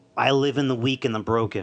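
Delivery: ordinary talk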